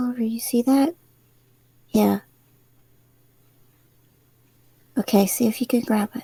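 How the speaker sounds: soft muttering under the breath. A player's character speaks to clover, muttering under her breath. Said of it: "she kind of mutters like under her breath".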